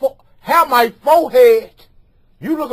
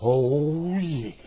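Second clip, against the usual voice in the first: hushed, very deep, soft growl, oh drawn out; 9 semitones lower, 10 dB quieter than usual.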